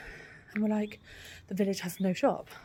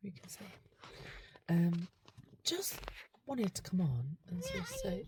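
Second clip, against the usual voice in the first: whispered, barely voiced, soft and hushed; 5 dB quieter than usual. Talking to the camera while Fallon snoozes in the back, whispering. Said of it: "I'm whispering because I've just picked Fallon up".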